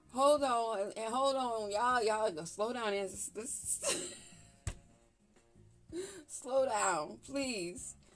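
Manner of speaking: loud, talking through fits of laughter. Asking the others to slow down, laughing while talking. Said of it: "this laughter and these tears of, from laughing".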